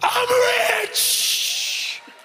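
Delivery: put-on yelling voice. Retelling a grandmother in a family prayer circle: imitating grandmother yelling. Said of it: "my grandmother would just start yelling".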